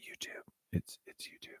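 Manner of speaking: hushed whisper, very quiet, barely there. Telling Bridget where to catch the replay, whispering. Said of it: "I don't know why I'm whispering".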